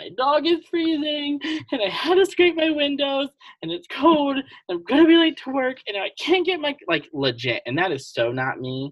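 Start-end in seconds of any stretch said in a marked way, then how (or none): 0.0-6.8 mock very high, loud, wailing, sobbing rant. Retelling breaking down when the car stopped on ice: imitating own past sobbing. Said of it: "I'm crying".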